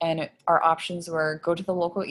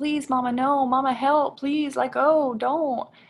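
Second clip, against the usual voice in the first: mock high child's begging, pleading scream; 8 semitones higher than usual. A parent retells their son screaming at them during an ng tube, imitating a child screaming, begging. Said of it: "He's just screaming at me like".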